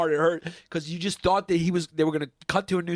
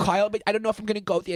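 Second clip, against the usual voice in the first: put-on nervous New York voice, higher; 4 semitones higher than usual. Retelling a cartoon episode, imitating the cousin: Woody Allen voice. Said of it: "He talks kinda like Woody Allen".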